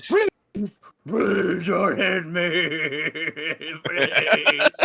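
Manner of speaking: very slow, drawn-out, begging, pleading ogre voice. Voicing a beaten ogre on its turn: pleading ogre voice. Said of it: "the ogre ... sits there and goes".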